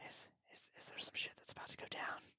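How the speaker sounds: very quiet, hushed, leaning-in whisper. Voicing a nervous motel clerk who leans in: whispering. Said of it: "leans in and whispers".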